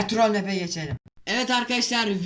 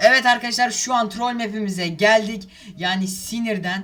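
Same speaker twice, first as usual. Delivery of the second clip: ordinary talk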